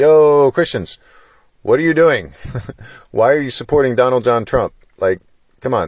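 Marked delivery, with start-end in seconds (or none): 0.0-4.7 loud, high-pitched calling out. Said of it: "Why am I the type that's like".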